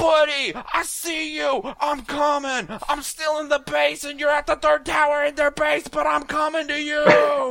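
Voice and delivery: shrill, full-volume, high, thrilled shouting. Advising players to yell at friends over voice chat, excited yelling. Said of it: "Yell excitedly".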